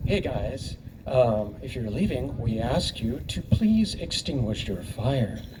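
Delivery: polite, friendly, courteous put-on host voice. Retelling addressing departing campers, in a put-on polite camp host voice. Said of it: "in my polite camp host voice".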